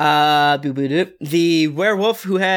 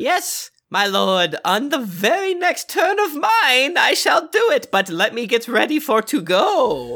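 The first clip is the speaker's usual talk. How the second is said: high, very slow creature voice, go dragged out; 8 semitones higher than usual. Voicing a charmed creature speaking to its new master: Piggles voice. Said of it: "it's looking at you and it says".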